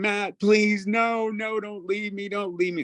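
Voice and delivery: put-on very high, panicked, pleading scream. Retelling how a man begged not to be left behind, imitating panicked screaming. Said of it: "And he's screaming".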